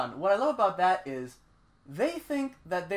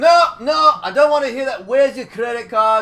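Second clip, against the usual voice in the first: very loud, high, belligerent acted shouting; 9 semitones higher, 14 dB louder than usual. Retelling a belligerent drunk guy's replies: imitating a belligerent drunk. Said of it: "the really belligerent guy".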